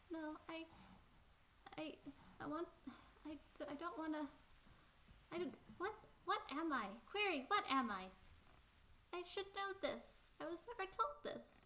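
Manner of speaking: very high, tearful, crying robot voice. Voicing a tired character who is still crying: crying character voice. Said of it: "still crying and going like".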